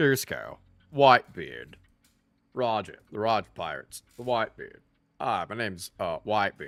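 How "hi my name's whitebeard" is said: soft, slow-witted, dopey, goofy brute voice. Reading the story aloud, the speaker voices the next figure: Whitebeard voice like Kronk. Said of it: "I sound like a Kronk".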